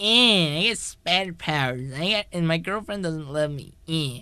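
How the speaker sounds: put-on soft, small, whiny little-kid voice. Mocking the original film's hero as a whiny kid: whiny Peter Parker impression. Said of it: "whiny little, like, kid".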